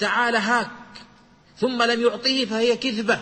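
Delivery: normal talking voice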